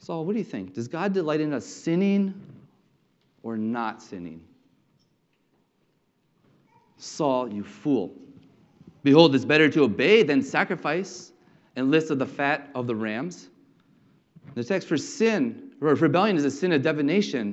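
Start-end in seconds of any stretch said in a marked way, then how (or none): 0.0-13.5 belittling, sarcastic scolding tone. Paraphrasing Samuel rebuking Saul from the text, imitating a sarcastic tone. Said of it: "a tone of sarcasm here".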